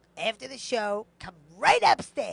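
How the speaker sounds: very loud, grating, nails-on-chalkboard voice. Imitating his voice while retelling what he said: grating nails-on-chalkboard imitation. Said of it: "I like the way you do his voice".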